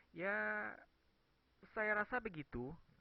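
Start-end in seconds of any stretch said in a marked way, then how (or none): 0.2-0.7 long, drawn-out, raised, half-agreeing ya. Explaining the indonesian for 'i guess so', with a drawn-out 'ya'. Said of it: "Jadi ya-nya itu agak lama".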